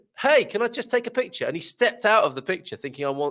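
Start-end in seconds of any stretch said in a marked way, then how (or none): 0.2-1.5 very high, acted-out, called-out shout. Retelling calling out to a young gentleman at sunset: imitating own past shout. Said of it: "I shouted to him".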